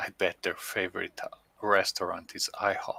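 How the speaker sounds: hushed whisper. Voicing a character who turns to Matilda and whispers a joke: whispering. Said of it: "I turn to Matilda and whisper to her".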